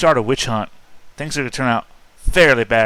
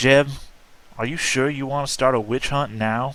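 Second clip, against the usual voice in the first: quiet voice, just loud enough to carry; 2 semitones higher, 4 dB quieter than usual. Squinting at jeb in a role-play, very low tone, still audible. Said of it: "say in a very low tone, I mean loud enough to be heard, but low".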